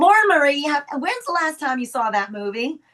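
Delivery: put-on Texas accent. Retelling a friend asking about a movie: imitating Julie's Texas accent. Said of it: "she still has her, her Texas accent".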